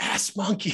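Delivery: hushed, breathy, quiet whisper. Retelling a client saying the password over the phone: imitating a whispered password. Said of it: "she could never say it loud".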